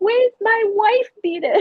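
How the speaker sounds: put-on very high little-kid toddler voice. Retelling what a toddler always asked for: imitating a toddler. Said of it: "So he would always be like".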